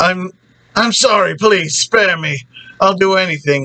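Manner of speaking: put-on terrified, panicked, stammering begging. Retelling a scene where a terrified character begs: imitating someone begging. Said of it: "so he's begging".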